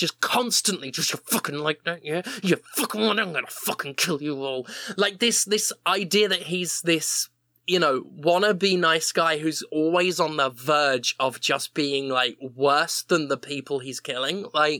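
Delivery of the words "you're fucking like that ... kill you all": put-on muttering under the breath. Describing a game character who mutters while stealth killing, muttering under breath. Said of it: "he's just muttering under his breath".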